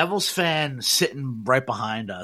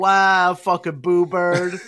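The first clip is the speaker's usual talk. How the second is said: put-on mocking taunting voice, higher and louder; 4 semitones higher, 6 dB louder than usual. Retelling own heckling of a rival fan: retelling mocking taunts. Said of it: "chirping him hard at this point".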